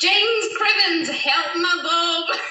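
loud, terrible put-on Scottish accent. Asked to repeat an earlier attempt, the speaker does a bad Scottish accent. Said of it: "the worst Scottish accent I've ever heard in my life".

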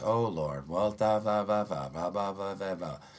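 mocking, flat, lifeless rote reading. Describing people reading prayers off their phones, mocking a lackluster prayer voice. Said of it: "They read that prayer in that kind of that lackluster voice".

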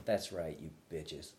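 fired-up, angry, self-pumping delivery. Retelling the line said before stepping on stage: imitating own angry pre-show line. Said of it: "Tim is angry".

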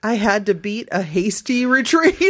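normal talking voice

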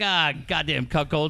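ordinary delivery

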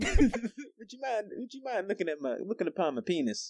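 very high, put-on courtly gentleman's voice. Joking about always asking first before sending a picture: mock gentleman voice. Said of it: "I'm a gentleman. I ask first".

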